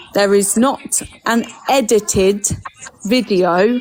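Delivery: slow, measured, deliberate, word by word. Repeating a point about an unedited video, now spoken slower. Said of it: "I'm going to say it slower".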